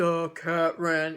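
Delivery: put-on low elderly man's voice. Recounting a reading exercise, saying the sentence in a deep old man voice. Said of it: "say it in a deep um, old man voice".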